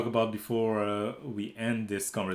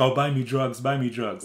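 ordinary talk

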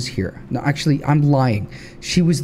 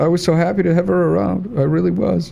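tearful, crying while talking, higher pitch; 5 semitones higher than usual. Talking to the fellas about making her a grave: crying while talking. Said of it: "I'm actually fucking crying".

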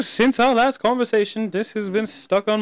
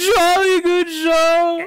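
put-on cartoon character voice, pitched higher; 8 semitones higher than usual. Quoting a cartoon scene in Pops voice. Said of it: "how would you rate my Pops voice?".

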